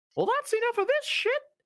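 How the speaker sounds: very high, bright, fast piping toaster robot voice. A player speaks as their toaster character, in a bright piping toaster voice. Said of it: "in my bright piping toaster's voice".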